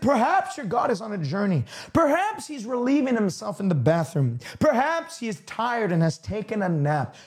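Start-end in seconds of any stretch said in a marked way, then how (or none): none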